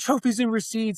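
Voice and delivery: mild mock cheering yell.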